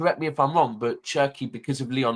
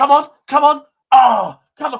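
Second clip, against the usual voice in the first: very high, very loud, shrill, anxious, desperate voice; 13 semitones higher, 13 dB louder than usual. Retelling hearing someone downstairs watching a match: imitating Soups urging a team on. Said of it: "all I can hear downstairs is Soups going".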